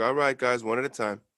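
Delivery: calm, steady, composed PA intercom announcer voice. Imitating Nate during a fire emergency: calm intercom voice imitating Nate. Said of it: "that calm ass voice that comes over on the intercom".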